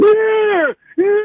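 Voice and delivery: very high, loud, shrill squealing voice. Answering a call-in greeting as Joe Biden: squealing Joe Biden impersonation. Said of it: "A guy squealing?".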